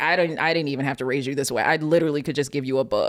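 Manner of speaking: plain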